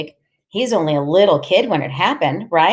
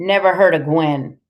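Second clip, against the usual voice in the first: ordinary delivery, nothing marked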